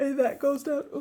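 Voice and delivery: yawning through the words. Going over a budget out loud, speaking while yawning. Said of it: "sorry, I'm yawning".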